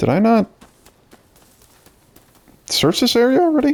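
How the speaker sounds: voice cracks, breaking very high. Playing a game and wondering aloud, voice cracking. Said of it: "Voice broke there".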